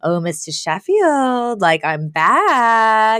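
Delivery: sultry call with back drawn out long. Recapping a scene, the speaker voices Fran calling to Mr. Sheffield, imitating Fran's sultry voice. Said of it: "calls out to him in a sultry voice".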